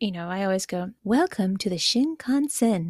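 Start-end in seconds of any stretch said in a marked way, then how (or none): 1.0-2.9 soothing train announcer voice. Recalling the lovely, peaceful train announcements: Shinkansen announcer voice. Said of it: "I wanted to ask if I could do my Shinkansen voice".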